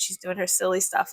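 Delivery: ordinary talk, nothing marked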